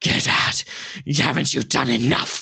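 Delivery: harsh, grating, rough, rasping voice. Narrating to the players, voicing a voice they suddenly hear: rasping voice. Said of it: "this kind of rasping voice".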